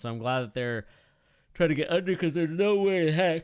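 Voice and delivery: talking through a yawn. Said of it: "I am just yawning way too much".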